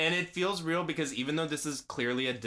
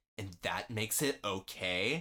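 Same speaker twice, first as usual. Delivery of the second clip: put-on sneering tone, slower; 4 semitones lower, 4 dB quieter than usual. Recapping a scene, quoting a character's reply, retelling a sneer. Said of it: "and he sneers".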